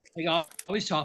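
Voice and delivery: ordinary talk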